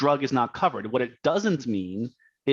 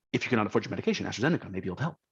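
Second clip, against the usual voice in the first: rushed, low, soft, rattled-off fine-print read; 4 semitones lower, 5 dB quieter than usual. Imitating the end of a drug commercial, very fast and low. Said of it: "they say it really fast and really low".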